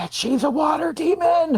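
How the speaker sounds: high stage whisper. Speaking in character to a companion about the girl: stage whisper. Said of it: "I definitely stage whisper to Rosalia".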